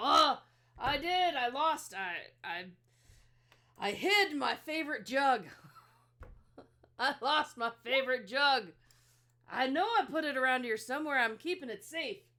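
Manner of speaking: fantasy dwarf character voice. Retelling a scene with an orc and a dwarf, speaker voices the dwarf: dwarf character voice. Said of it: "the dwarf's all".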